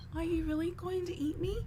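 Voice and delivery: tiny sorrowful voice, very high, soft, hushed. A writhing lobster-like creature speaks to someone about to eat it, sad voice. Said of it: "Just with this sad voice".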